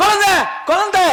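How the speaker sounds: loud shout. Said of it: "இப்படி கத்துற பாரு".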